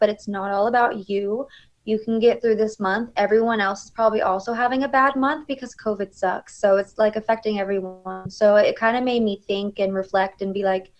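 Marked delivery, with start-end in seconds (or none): none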